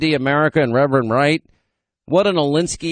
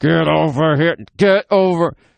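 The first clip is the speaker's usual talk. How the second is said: firm, stern, no-nonsense mean-dad voice. Retelling calling the dog back after play: imitating a mean daddy voice. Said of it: "Give her that mean daddy voice".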